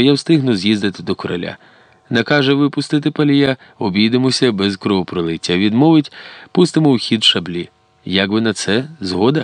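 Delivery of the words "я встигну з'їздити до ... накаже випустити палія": usual speaking voice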